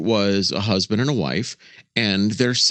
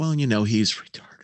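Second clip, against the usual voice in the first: plain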